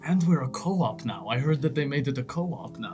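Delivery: low, very quiet, barely audible half-whisper. Player in character, walking along, half-whispering. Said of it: "I'm whispering like".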